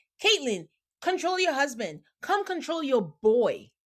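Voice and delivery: acted, held-in mild yell. Retelling a cast member's outburst at another: imitating someone yelling. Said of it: "And then she starts yelling".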